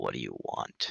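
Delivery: very deep, very low, soft voice. Narrating a story where a voice comes out of the darkness, in a very deep voice. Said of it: "a very deep voice".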